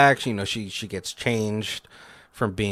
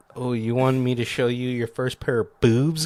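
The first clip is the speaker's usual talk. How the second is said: put-on voice sounding twenty-two years old. Retelling how Becky talks to Tucker: imitating Becky's tone. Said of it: "kinda, like, tone".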